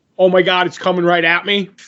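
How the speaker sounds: usual speaking voice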